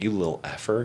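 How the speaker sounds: put-on quiet under-breath mutter. Retelling how someone carried a child out of a restaurant: imitating a quiet mutter under breath. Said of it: "under his breath, I think he just said quietly".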